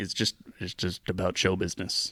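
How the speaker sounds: put-on deep, calm, soothing voice. Retelling a man's answer about the makeup, imitating his deep, calming voice. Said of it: "he had this deep, like calming voice".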